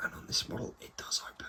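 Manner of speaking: whispering. Showing the model's opening hangar door, whispering. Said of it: "And I'm whispering because".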